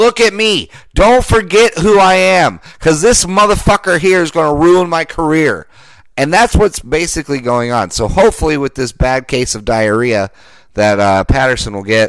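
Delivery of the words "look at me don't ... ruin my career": acted, high-pitched, show-off screaming. Imitating a receiver calling out to the NFL: imitating someone screaming. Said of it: "screaming to the N F L".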